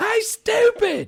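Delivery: put-on very high, loud yell in a country accent. Recalling a girl yelling across the commons area, imitating Melissa's country accent. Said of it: "because she had that country accent".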